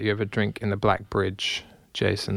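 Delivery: ordinary delivery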